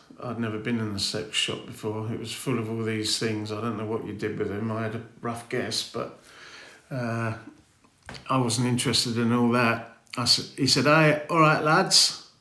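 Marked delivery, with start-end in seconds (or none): 10.8-12.2 put-on Bradford accent from northern England. Retell how a man in the sex shop greeted you, in a northern Bradford accent. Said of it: "in his northern Bradford accent".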